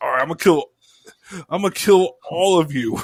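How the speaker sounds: mock angry, really pissed-off and furious. Retelling a scene where Vegeta gets real pissed: imitating furious Vegeta. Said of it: "he gets real pissed".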